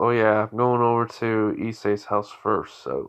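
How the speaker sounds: ordinary delivery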